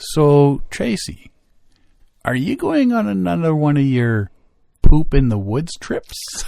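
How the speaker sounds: slow, unhurried, plodding, drawn-out way of talking. Retelling a coworker's question about the trip: imitating slow speech. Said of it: "this one lady who speaks slow and is like".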